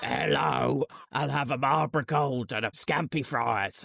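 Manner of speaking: put-on heavy smoker's voice. Ordering cigarettes and scampi fries, imitating a heavy smoker's voice. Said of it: "Why do they sound like they smoke ninety a day?".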